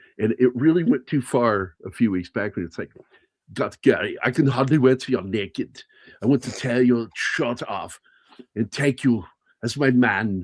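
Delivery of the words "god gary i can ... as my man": put-on Austrian accent voice. Doing an impression of an Austrian woman talking to Gary, imitating her, sounding like Arnold. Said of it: "I'm supposed to sound like Arnold".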